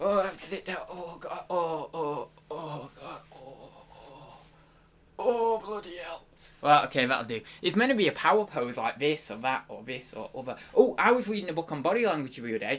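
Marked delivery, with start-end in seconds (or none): 0.0-6.2 slow, drawn-out, pained delivery. Acting out the card "Zakia having a stitch": put-on voice of Zakia with a stitch. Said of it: "I don't know why I'm doing the voice".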